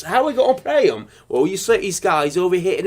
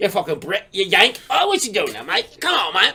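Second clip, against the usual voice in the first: scrappy kangaroo voice, goading, taunting, spoiling for fight; 3 semitones higher than usual. Acting out a kangaroo picking a fight: fast-talking kangaroo voice. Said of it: "I imagine a kangaroo talks fast".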